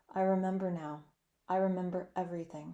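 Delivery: plain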